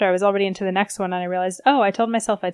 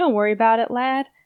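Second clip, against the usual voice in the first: bad, failed attempt at Southern accent; 2 semitones higher than usual. Trying to hear a Southern character in their head, the speaker does a bad Southern accent. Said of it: "I can usually do a much better Southern accent".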